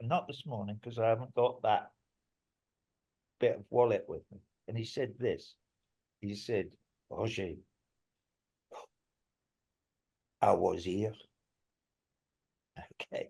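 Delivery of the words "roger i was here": low, put-on, sort-of French accent. Quoting what a man once told him and he wrote down, quasi-french accent. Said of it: "I'm sorry about my quasi-French accent".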